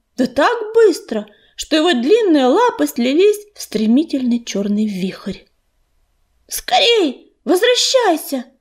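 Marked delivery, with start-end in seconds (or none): 6.5-8.4 gasping, out-of-breath shout, high pitched. An apprentice races through the grass toward the cats, calling out: breathless shouting. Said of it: "задыхаясь, кричал он".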